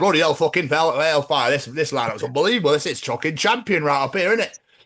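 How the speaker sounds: put-on high, chatty Yorkshire accent, local man's voice. Speaker acts out how any yorkshire person would talk: yorkshire accent impression. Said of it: "any Yorkshire person going, and you'd be like".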